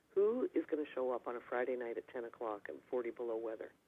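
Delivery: normal talking voice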